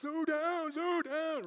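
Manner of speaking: animated, very high, very loud, drawn-out yell. Retelling a man shouting at the speaker for driving fast, imitating loud yelling. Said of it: "really loud".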